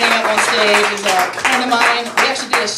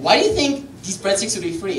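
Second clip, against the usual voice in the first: usual speaking voice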